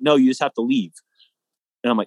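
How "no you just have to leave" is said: normal talking voice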